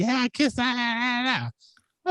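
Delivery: put-on very high, puffed-up, boastful kid voice. Retelling a six-year-old's boast to her siblings: imitating a boastful child. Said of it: "puffing up her chest".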